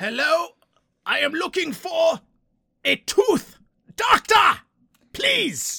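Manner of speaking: put-on German accent. Playing Red Skull in a role play at the dentist: fantastic German accent as Red Skull. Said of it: "Dad's fantastic German accent".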